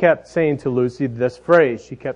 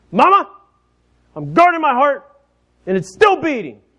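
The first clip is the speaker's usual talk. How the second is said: put-on tiny, high little three-year-old's shout; 13 semitones higher, 4 dB louder than usual. Retelling what three-year-old Lucy yelled to her mama, imitating Lucy yelling, little voice. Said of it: "yelled in her little 3-year-old voice".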